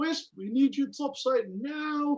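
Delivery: loud yelling. Voicing a character who opens a hatch and calls someone up: yelling. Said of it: "and just yells".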